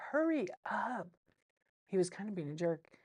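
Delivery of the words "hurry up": mild, lightly done rude yell. Retelling a husband at a casino yelling at his wife: imitating a husband yelling. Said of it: "this guy was yelling at his wife".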